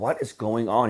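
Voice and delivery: fed-up, exasperated, frustrated, at wits' end. Retelling a caller's words after companies said no: imitating a frustrated caller. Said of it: "you could just feel the frustration in his voice".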